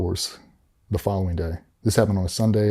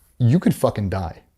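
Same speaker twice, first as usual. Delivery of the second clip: imitated blunt, flat delivery; 2 semitones higher than usual. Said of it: "just like that".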